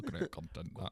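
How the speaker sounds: put-on old-time coal miner voice. Imitating miners coming out of the mine: imitating a miner. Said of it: "That's what they used to say when they came out the mine".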